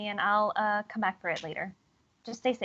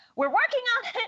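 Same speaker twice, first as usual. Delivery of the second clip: very high, loud call flung out; 13 semitones higher, 5 dB louder than usual. A player's character, running, answers a voice out loud; said pretty loudly. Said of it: "pretty loudly".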